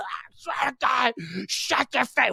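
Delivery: high-pitched screaming, yelling. Recounting two men fighting during a singalong, imitating one screaming. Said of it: "They're screaming at each other".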